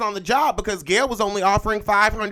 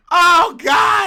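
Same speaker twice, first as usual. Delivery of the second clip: very high, loud, bursting with laughter; 9 semitones higher, 6 dB louder than usual. Reacting to what was just said, laughing while talking. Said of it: "I don't know why I'm laughing at this".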